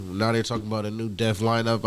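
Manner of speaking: ordinary delivery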